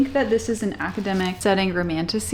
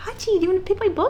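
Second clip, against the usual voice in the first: very high-pitched talking voice; 11 semitones higher than usual. Asking the dog to pick a book: dog-talking voice. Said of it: "I go into dog talking voice".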